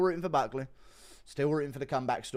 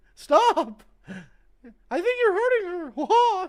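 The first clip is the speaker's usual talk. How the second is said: very high, swooping, sing-song cartoon squeak; 5 dB louder than usual. Doing Mickey Mouse telling someone to stop: Mickey Mouse voice. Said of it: "Impression of Mickey Mouse telling War Machine to stop".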